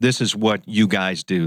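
ordinary talk

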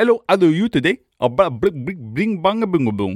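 put-on Indian accent. Mocking an accent while naming disliked accents: put-on Indian accent. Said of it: "I can't stand Indian, uh, accents".

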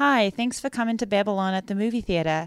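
awkward, uncomfortable delivery. Retelling a pre-movie greeting in the theater, imitating Margot Robbie. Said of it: "Margot Robbie being like".

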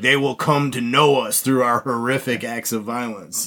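normal talking voice

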